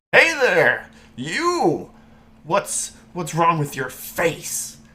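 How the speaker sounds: loud, high hollering yell. Voicing someone trotting up in the street and yelling at a player: yelling at a passerby. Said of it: "you hear somebody yell".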